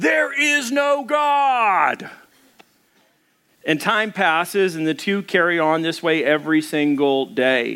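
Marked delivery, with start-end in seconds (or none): 0.0-2.1 very high, very slow shout, "God" stretched out. Telling a joke about an atheist neighbor: imitating someone yelling. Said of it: "he'd yell out".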